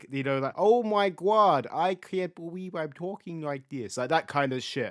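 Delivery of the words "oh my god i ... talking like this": slow put-on baby voice, laid on. Imitating someone's annoying way of talking, in a put-on baby voice. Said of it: "The baby voice".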